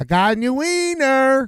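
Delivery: put-on slow, high-pitched strong Southern accent. Retelling how Savage came up to the screen with a hot dog, imitating Savage's hardcore Southern accent. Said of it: "Savage got this real hardcore Southern accent".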